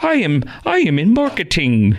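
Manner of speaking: very slow, stretched-out, swooping sing-song. Retelling a scene from Muppets Take Manhattan, imitating Kermit the Frog's changed voice. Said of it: "He talks like that instead of talking like he normally does".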